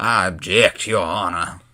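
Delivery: slow Southern US lawyer drawl. Joking about how to argue in Nerd Court: Southern lawyer accent. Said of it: "talk in Southern lawyer accents like".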